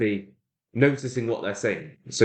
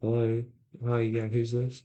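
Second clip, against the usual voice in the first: quiet, timid, shy, hesitant voice; 3 dB quieter than usual. Giving phone advice, acting out how a shy person answers, imitating a quiet, shy caller. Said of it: "maybe they're a bit quiet, shy".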